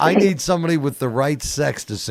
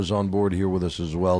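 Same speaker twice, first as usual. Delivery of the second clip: usual speaking voice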